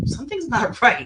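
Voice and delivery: high, loud laughing with disbelief and alarm.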